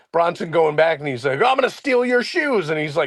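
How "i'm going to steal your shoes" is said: mock, high-pitched, shouty wrestler-style screaming. Retelling a wrestler's video, imitating someone screaming. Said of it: "he's screaming at Bronson".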